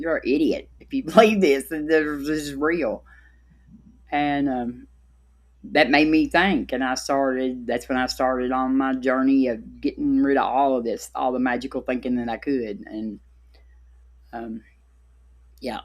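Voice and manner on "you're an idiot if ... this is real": scornful, derisive, mocking taunting tone. Retelling what the fourteen-year-old daughter said: imitating daughter mocking. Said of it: "she mocked me".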